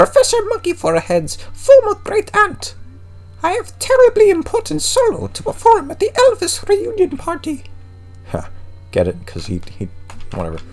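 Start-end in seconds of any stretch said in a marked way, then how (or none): 0.0-7.6 very high, swooping, bad ghost voice. Voicing a ghost great-aunt's lines, in a bad Baroness Beaver Forehead voice. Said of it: "This is even worse".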